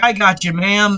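ordinary delivery

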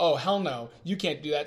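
normal talking voice

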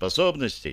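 plain

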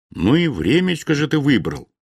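ordinary delivery, nothing marked

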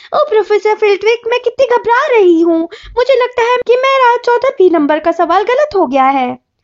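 snide, high, teasing mock voice, fretful. Narrator reading Ron's line to Hermione, high mocking imitation. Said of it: "उसने ऊंची आवाज में नकल उतारते हुए कहा".

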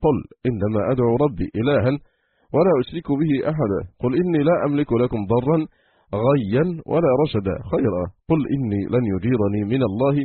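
usual speaking voice

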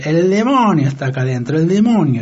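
usual speaking voice

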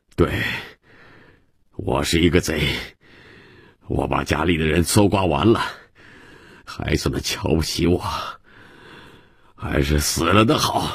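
ordinary delivery

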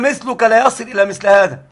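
ordinary delivery

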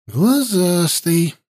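muttering, mumbling under breath. Hasta remarks on the young courtier's find, muttering under his breath. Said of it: "под нос себе пробормотал Хаста".

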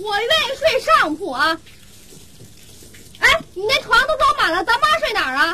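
squeaky, high-pitched voice.

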